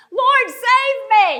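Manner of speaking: very loud, very high desperate cry, "save" drawn out. Retelling how a man cried out for Jesus to save him: acting out a desperate cry. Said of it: "Man, it's desperate".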